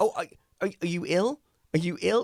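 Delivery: mock startled concern, alarmed, very high-pitched. Retelling what the producer said on seeing the beard: imitating an alarmed producer. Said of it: "she was visibly alarmed".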